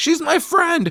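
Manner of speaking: very high, upset, shouted yell. Recapping a movie scene, acting out a character yelling at another, retelling a yell. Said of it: "Katie's yelling at her about it".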